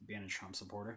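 put-on flat delivery. Retelling an attendant's answer about deal breakers, retelling a deadpan answer. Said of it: "She just looked at me deadpan".

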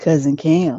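low, mood-setting late-night soul voice. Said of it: "Why did you start with that midnight soul voice?".

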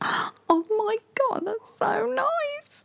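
very high, fake-tearful, gushing voice. Describing their reaction when people spend money on them, with fake crying. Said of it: "I'm not really crying, by the way".

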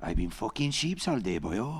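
put-on Welsh accent. Offering to deliver a line for the others, welsh accent. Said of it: "can deliver this in a Welsh accent".

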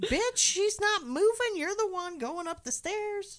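put-on nervous yelling, pitched very high. Retelling how a character kept yelling on shaking stairs: imitating someone yelling. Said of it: "But he keeps yelling".

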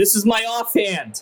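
high-pitched shouting. A player attempting one-arm push-ups in a tabletop game announces it, yelling. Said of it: "but I'm going to yell".

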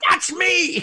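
mock very high, shrill, loud childlike yell. Recalling seeing themself on screen with Alec Guinness, retelling a yell like a 9-year-old. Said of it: "I yelled".

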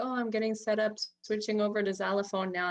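ordinary delivery

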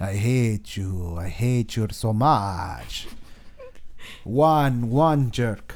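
put-on very slow, drawn-out Romanian accent. Imagining how the one they named Dracul talks: Romanian accent. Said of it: "I imagine he has a Romanian accent".

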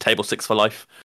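ordinary delivery

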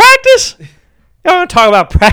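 very high, animated voice. Trading impressions on a podcast after someone claims to know this one, Allen Iverson impression. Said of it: "that's why I know my Allen Iverson".

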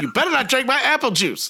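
wild, furious, high-pitched, losing control. Imitating a spouse who would go ape shit: imitating Jasmine going ape shit. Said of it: "Like that".

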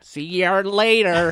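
put-on American accent. Suggesting a comeback to a stranger: put-on American accent. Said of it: "You should have said something with an American accent".

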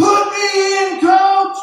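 very loud, high, shrill, drawn-out scream. Caught up in the moment at a game, retelling a yell. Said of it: "And I'm yelling".

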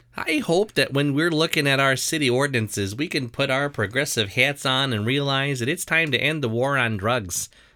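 barely-there attempted Michigan accent, mostly own voice. Reading aloud a resident's quote to council: put-on Michigan accent. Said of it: "I was trying to do a Michigan accent".

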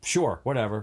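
sassy tone with attitude. Retelling someone's reply to being told to leave: imitating a reply with attitude. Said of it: "With an attitude".

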